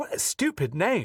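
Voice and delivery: slow put-on British accent, best attempt. Quoting Matt's reply about pronouncing a last name, in Matt's British accent. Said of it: "That's my best British accent".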